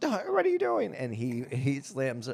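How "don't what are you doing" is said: play-acted, very high, screaming yell. Retelling a movie scene where a woman is yelling: imitating a woman yelling. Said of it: "she's yelling and screaming".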